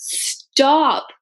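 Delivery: put-on brief, high-pitched short call. Retelling what was said to a brother rushing through New York: retelling a yell. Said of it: "yelled at him".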